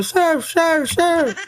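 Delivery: acted, very high, frantic, repeated yelling. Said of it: "Bakit kailangan mong sumigaw?".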